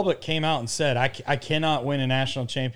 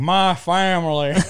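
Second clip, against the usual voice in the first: put-on Southern accent, higher and louder; 4 semitones higher, 5 dB louder than usual. Host repeating a man's words from a sound clip, mimicking that southern accent. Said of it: "with that accent".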